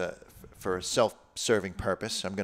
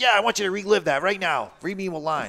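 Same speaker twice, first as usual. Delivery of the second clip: shrill, high-pitched raised voice; 10 semitones higher, 6 dB louder than usual. Retelling how she asks him to read a line: imitating his partner's voice. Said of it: "don't I sound like that?".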